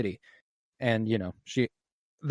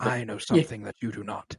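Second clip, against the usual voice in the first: put-on scheming character voice, quieter; 2 semitones lower, 6 dB quieter than usual. Praising a character's voice, then doing Littlefinger voice. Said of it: "his voice".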